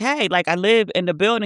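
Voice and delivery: ordinary talk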